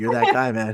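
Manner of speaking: put-on whispered voice. Imagining a quarterback whispering praise to another after a game: imitating Aaron Rodgers whispering. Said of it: "He's whispering to him".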